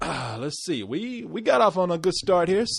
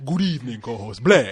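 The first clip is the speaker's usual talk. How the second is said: put-on vampire voice, pitched lower; 4 semitones lower, 3 dB louder than usual. Showing the co-host how it's done, the speaker greets them in a Dracula voice. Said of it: "I was trying to get my Dracula voice going on".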